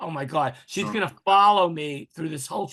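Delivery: ordinary talk, nothing marked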